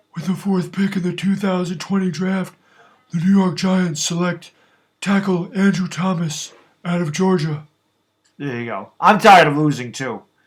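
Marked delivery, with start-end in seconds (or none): 0.1-7.6 put-on basketball announcer voice. Asked by a viewer, announcing a draft pick in a Shaq voice. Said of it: "Announce the Andrew Thomas pick in your Shaq voice".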